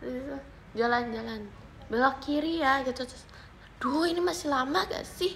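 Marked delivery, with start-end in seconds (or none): 3.8-5.4 mock angry, annoyed grumbling, higher. Retelling a complaint while searching for the way, imitating angry grumbling. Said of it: "marah mulu sepanjang jalan".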